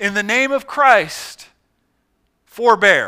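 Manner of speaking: yelled as loud as possible, slow and desperate. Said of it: "he yelled as loud as he could".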